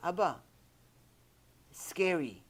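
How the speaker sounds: put-on small, tiny three-year-old child's voice. Retelling what a little daughter said: imitating a little daughter. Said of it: "my little daughter".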